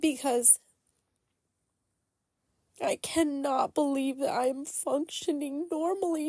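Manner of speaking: high, tearful, crying speech. Telling how someone gave them a hug, crying while talking. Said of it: "I'm just going to start crying".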